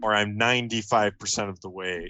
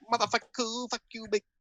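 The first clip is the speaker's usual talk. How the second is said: mock Chinese accent, much higher; 13 semitones higher than usual. Showing off a long-practised accent to the other speaker, in a put-on Chinese accent. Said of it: "I've spent a lot of time alone doing this accent".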